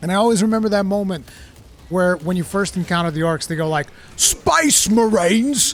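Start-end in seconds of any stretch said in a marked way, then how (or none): 4.2-5.7 put-on high-pitched orc yell in a Cockney accent. Recalling first encountering the orcs in a game, doing the cockney orc voice. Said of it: "the Cockney accent they gave those orcs".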